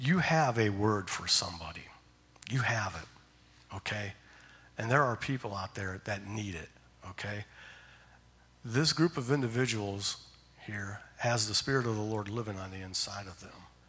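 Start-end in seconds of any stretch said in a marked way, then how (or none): 0.0-7.4 soft-spoken, gentle, encouraging tone. Addressing a group of listeners, speaking in a soft voice. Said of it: "I'm speaking with a soft voice".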